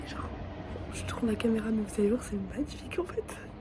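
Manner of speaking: soft, hoarse, whispered voice.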